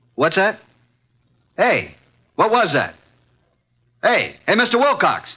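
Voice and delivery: high-pitched shouting. Archie on the phone with mister wilcox, hearing something: shouting. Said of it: "stop shouting".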